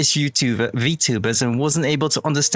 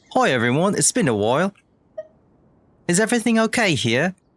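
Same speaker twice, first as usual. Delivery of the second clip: put-on British accent; 4 semitones higher than usual. Speaker deciding to say everything in British, greeting everyone, in a British accent. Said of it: "to say everything in British".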